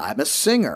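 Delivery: acted-out, mock-cocky delivery. Recalling answering a woman who asked what they do, retelling a cocky reply. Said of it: "with a cocky voice".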